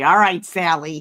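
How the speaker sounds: very loud, wry, sarcastic voice. Acting out how a nickname gets said to the kids: imitating sarcastic nickname use. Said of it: "is it done, like, sarcastically?".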